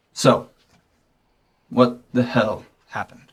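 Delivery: completely deadpan, quiet, flat and expressionless. A man looks at the other character and asks what happened, completely deadpan. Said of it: "[name] is completely deadpan right now. / He is watching the news, / [name] looks at you with the same deadpan face".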